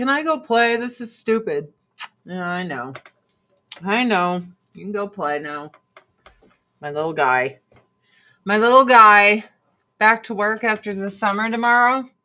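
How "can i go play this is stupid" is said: speaking in an imagined dog's voice. Talking to the dog, then voicing the dog: speaking as the dog. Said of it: "He's like".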